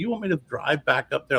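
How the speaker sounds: acted annoyed, fed-up, irritated delivery. Retelling own reply to car dealers about redoing paperwork: retelling own irritated reply. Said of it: "I was really getting irritated".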